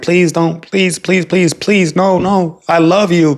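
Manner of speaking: high, tearful, desperate crying plea. Retelling how a man begged a woman who wanted a break, imitating his begging. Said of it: "this dude was begging her".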